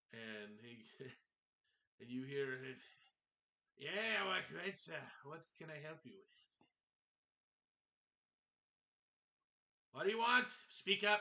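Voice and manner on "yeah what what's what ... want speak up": put-on very loud, raised old man's voice. Voicing the man heard calling out from the back: old man's voice. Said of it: "you hear an old male voice coming from the back".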